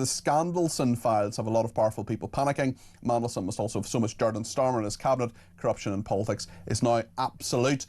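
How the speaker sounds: ordinary delivery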